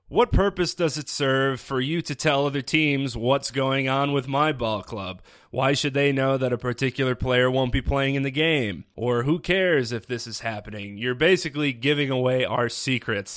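ordinary talk

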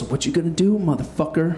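acted dead calm, unbothered, very calm, composed voice. Retelling how he stepped forward toward the speaker: imitating someone speaking very calmly. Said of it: "very calmly goes".

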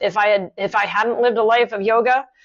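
ordinary talk, nothing marked

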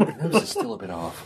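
slow, soft mutter under the breath. Looking up at a statue in character, muttering under breath. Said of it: "mutter to myself, under my breath".

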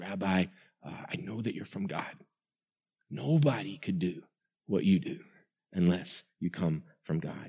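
confiding, secretive manner.

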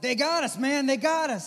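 very high, very loud, shrill screaming yell. Retelling a friend's phone call about the attack: imitating friend screaming. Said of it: "kinda screaming on the phone".

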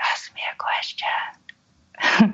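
very slow, drawn-out, barely-there whisper. Retelling asking the partner for a question: imitating own whisper. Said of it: "I just kind of whispered".

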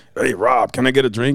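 gravelly tough-guy voice. Retelling the first time meeting him: imitating a raspy-voiced tough guy. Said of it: "tough guy, raspy voice".

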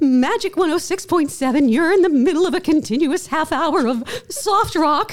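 mock trembling, wobbly on-air patter, very shaky, high. Retelling her first on-air words after praying, retelling a shaky voice. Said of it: "with a very shaky, shaky voice".

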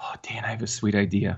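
in a whisper. Radio host speaking to the other host, whispering. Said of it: "Why are you whispering?".

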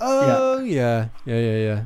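mock let-down, deflated, swooping sing-song voice. Retelling how a few people reacted to them: mock-disappointed yeah. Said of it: "in a kind of disappointed voice".

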